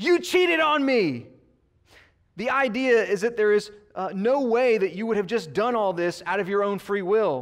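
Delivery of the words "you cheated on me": sudden, high, drawn-out yell. Retelling a scene from a show where the husband accuses his wife: imitating a husband yelling. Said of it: "he yells".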